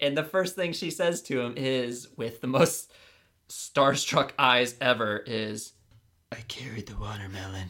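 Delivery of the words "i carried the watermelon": eerie, creepy, unsettling delivery. Retelling an infatuated character's first words to him, in a put-on creepy delivery. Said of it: "You made her sound like she was a... creepy person".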